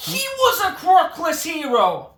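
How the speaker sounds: loud, slow, outraged outburst with laughter.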